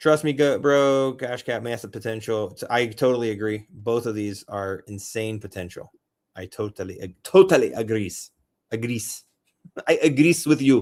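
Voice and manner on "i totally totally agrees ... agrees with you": joking put-on Jamaican accent. Agreeing with what was just said, in a put-on jamaican accent. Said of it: "that's my Jamaican accent".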